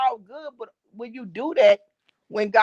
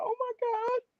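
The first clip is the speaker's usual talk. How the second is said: acted tearful speech, higher and quieter; 12 semitones higher, 7 dB quieter than usual. Retelling own words as a child watching a sad movie: imitating own past crying. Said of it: "And I was crying".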